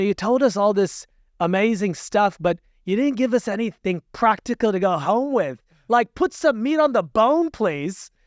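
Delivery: weak Aussie accent attempt. Retelling a sister's question to the sheikh at a late talk, in a not-great Aussie accent. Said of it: "I don't have the best Aussie accent".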